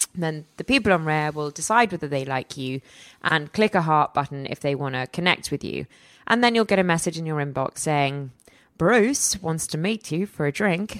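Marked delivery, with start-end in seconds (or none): 8.8-10.9 put-on light Australian accent, slow. Reading out a dating app message about a drink: bit of an aussie accent. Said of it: "that was a bit of an Aussie accent there".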